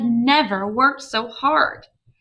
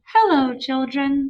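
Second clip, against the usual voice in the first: very sugary-sweet voice; 2 semitones higher than usual. Reading a story aloud, Miss Nelson greets the children in a very sweet voice. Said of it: "said in a very sweet voice".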